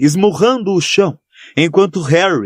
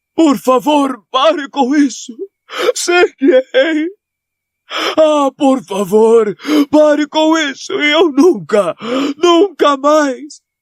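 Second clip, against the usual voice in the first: frightened character voice, much higher; 11 semitones higher than usual. The narrator reads the professor begging after Harry gives him the potion, frightened, pleading Dumbledore voice. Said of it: "disse [name], / Porque sou muito mais velho, / [name] ofegou, e em seguida falou com um timbre irreconhecível, porque [name] jamais ouvira [name] amedrontado daquela forma".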